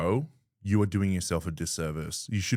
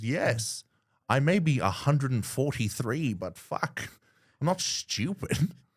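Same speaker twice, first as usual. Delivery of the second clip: slow pace with raised pitch; 6 semitones higher than usual. Retelling a Spider-Man movie hospital scene, imitating Aunt May. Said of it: "And she goes".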